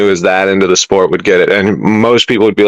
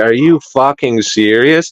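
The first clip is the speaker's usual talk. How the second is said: acted angry outburst, higher; 4 semitones higher than usual. Retelling missing the goal, imitating own angry outburst. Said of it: "that just fucking pissed me off".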